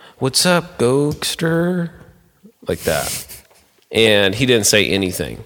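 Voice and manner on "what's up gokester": casual, slightly unsure and insecure, pitched up. Retelling how he greeted someone, as a mock-insecure greeting. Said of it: "I said it with just a little bit of insecurity".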